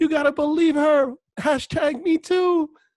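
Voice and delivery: very high, shrill, drawn-out scream. Retelling a public figure's outburst: imitating Alyssa Milano screaming. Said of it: "goes out there and screams".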